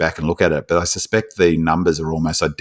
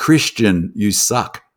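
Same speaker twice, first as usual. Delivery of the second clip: mildly jeering, mocking half-yell; 4 semitones higher than usual. Retelling what a man yelled during a whole match: retelling a loud scream. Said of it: "screaming like so loud that everyone could hear it".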